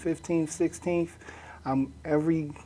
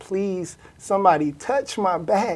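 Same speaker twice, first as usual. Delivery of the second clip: crying out at full scream; 4 semitones higher, 7 dB louder than usual. Recalling yelling at the doctors about back pain, retelling own screaming. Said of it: "I'm screaming at the doctors".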